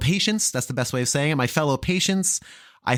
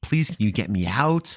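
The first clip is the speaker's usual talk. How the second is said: put-on tearful, crying, pleading tone; 5 semitones lower than usual. Retelling how she begged James to get her out, retelling tearful pleading. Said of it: "I'm crying".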